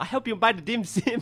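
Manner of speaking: put-on Chinese accent, pitched high. Acting out a line about buying dim sim in a put-on Chinese accent. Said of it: "I think it was Chinese".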